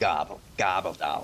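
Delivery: put-on, heavy five-packs-a-day smoker's voice. Trying out voices for the stream and asking a co-host, in a heavy smoker's voice. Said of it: "Edna smokes uh, five packs a day type".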